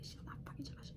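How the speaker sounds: hushed, quiet whisper.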